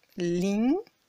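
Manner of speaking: short rise on ling, low to high briefly. Chinese tone lesson in French: low quick rise on ling. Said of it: "Le deuxième ton est un ton montant et bref. Il part d'assez bas et il monte haut".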